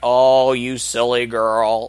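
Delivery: acted dismissive tone. Retelling how a local cop brushes off a screaming woman, mock-dismissive. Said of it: "he just totally dismisses her".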